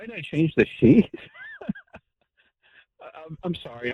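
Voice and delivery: talking through laughter with swooping pitch. Answering a question about changing the sheet, laughing while talking. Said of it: "Wade, what are you laughing about?".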